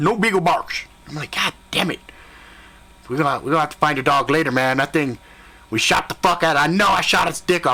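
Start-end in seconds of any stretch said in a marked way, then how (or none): none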